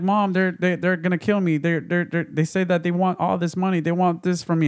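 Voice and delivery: put-on sobbing, crying, stumbling, pleading voice. Retelling a story, the speaker voices a daughter on the phone, imitating someone sobbing. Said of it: "She's sobbing like".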